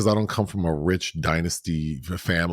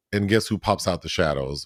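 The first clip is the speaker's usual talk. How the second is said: plain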